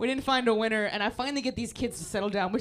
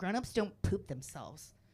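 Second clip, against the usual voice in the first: put-on soft, sassy kid voice; 3 semitones lower, 9 dB quieter than usual. Retelling what a little girl said at circle time: imitating a sassy kid. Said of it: "Really sassy little kid".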